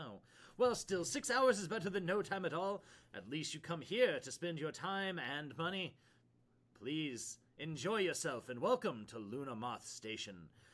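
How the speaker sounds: put-on light touch of Italian accent. Voicing a station contact greeting arriving players: slight Italian accent. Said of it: "has a slight Italian accent".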